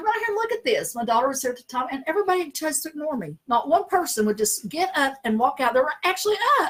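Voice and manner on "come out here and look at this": very high, carrying yell. Recalling seeing multicolored lights and calling to everybody, retelling a yell. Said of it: "I'm yelling to everybody".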